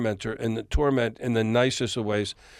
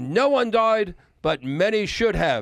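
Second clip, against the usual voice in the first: high, pitched-up yell in an English gentleman voice; 7 semitones higher than usual. Retelling how a producer answered a cheeky question: imitating Glyn Johns yelling. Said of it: "And he started yelling".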